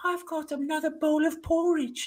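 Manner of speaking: put-on creepy little British child voice, very high and soft. Describing something scarier, the speaker mimics a kid with a british accent. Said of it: "like a kid with a British accent".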